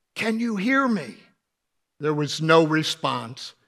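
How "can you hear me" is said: acted whisper, higher pitch. Retelling how a man tested whether his wife could hear him, retell his whisper. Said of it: "he whispers".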